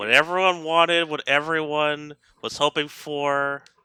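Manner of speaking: dripping with heavy sarcasm. Joking about an unexpected Pokemon Direct with others: heavy sarcasm. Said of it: "there's some heavy sarcasm here that I'm detecting".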